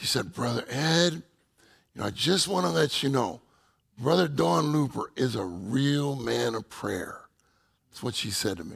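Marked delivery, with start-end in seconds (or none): 0.3-7.2 put-on Texan twang accent. Quoting what a woman told him about another man, in her texas accent. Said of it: "in her Texas accent".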